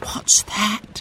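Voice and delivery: soft, breathy whisper under the breath. Mary hears a strange sound from the pump house with Jack, whispering. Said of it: "whispered Mary".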